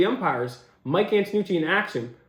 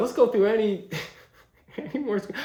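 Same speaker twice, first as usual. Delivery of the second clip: talking through laughter; 3 semitones higher than usual. Moving on to go through more screenshots, laughing while talking. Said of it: "I'm sorry I'm laughing".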